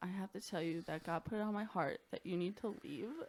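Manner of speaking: teary voice, close to tears. Retelling what a woman said after coming downstairs, imitating someone teary-eyed. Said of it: "She's like crying".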